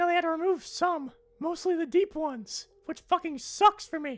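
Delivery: squeaked out, very high pitch. Joking about a changed voice box, the speaker switches to a Mickey Mouse voice. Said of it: "with the Mickey Mouse setting?".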